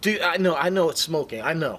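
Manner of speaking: snarky.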